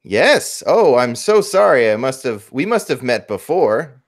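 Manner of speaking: really loud, slow, deliberate delivery. Voicing a character fooling no one with a lie: saying this really loud. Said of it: "saying this really loud".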